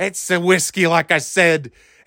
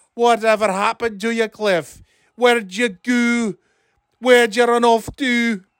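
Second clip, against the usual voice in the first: put-on Scottish accent; 5 semitones higher than usual. At the Womack Family Holiday Spectacular, the uncle calls for his nephew; Scottish Uncle Cliff voice. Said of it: "old Scottish Uncle Cliff".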